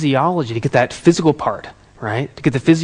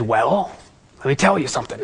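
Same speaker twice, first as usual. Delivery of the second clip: put-on raspy voice; 4 dB quieter than usual. Retelling what Tony answered when asked about his look: imitating Tony's raspy voice. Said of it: "He has kind of a raspy voice".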